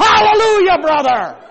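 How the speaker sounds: very loud, very high-pitched shout. Telling a story about people shouting and dancing, retelling a shout. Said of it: "And then I shouted".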